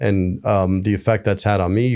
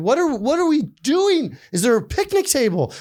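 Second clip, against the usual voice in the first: put-on shrill, swooping, very high incredulous yelling. Retelling how a man yelled at the speaker's friend from north carolina, retelling an incredulous yell. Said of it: "He's like yelling at my friend".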